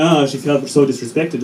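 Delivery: ordinary talk, nothing marked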